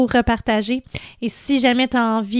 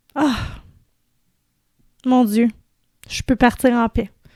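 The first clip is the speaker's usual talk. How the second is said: teary, emotional voice, close to tears. Thanking the community for believing in the message: teary, emotional voice. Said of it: "J'ai les larmes aux yeux".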